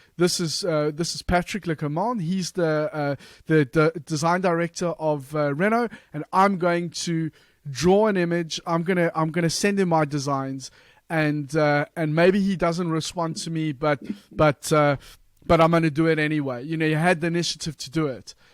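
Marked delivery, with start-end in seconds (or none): none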